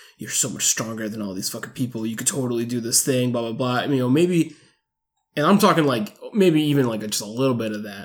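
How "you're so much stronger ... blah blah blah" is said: coaxing half-whisper throughout. Imagining an alien tempting the hero, like Palpatine to Anakin: half-whispering like Emperor Palpatine. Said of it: "whispering and kind of being like".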